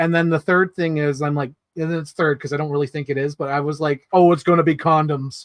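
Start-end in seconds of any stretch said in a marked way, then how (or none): 4.1-5.5 loud, blurted, mock call-out. Retelling calling something out during a movie: retelling a loud call-out. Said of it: "When I yelled that".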